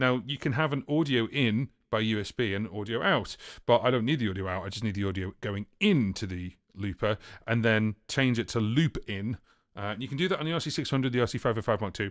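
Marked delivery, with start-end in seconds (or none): 10.0-12.1 rushed, very fast, rapid-fire rattled delivery. Speaker explaining an audio looper setup, listing compatible models, very fast. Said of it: "I said that really fast".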